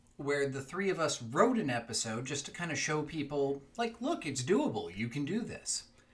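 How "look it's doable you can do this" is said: usual speaking voice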